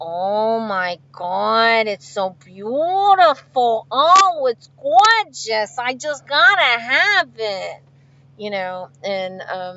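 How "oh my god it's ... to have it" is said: put-on Italian-Philadelphia accent. Telling about one's family, imitating sister's Italian-sounding accent. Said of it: "She's got that real Italian sounding accent".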